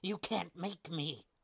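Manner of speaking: menacing, nightmarish snarl. Reading a story aloud, the creature clinging inside him snarls back in a nightmarish snarling voice. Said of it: "That's the voice of nightmares".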